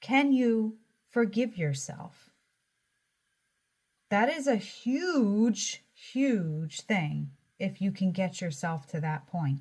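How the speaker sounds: choked-up voice, catching and breaking with emotion. Speaker asks whether you can forgive yourself, getting choked up. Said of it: "I'm getting choked up".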